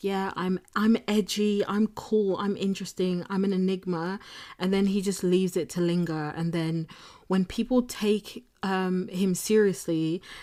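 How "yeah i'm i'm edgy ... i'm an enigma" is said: ordinary talk, nothing marked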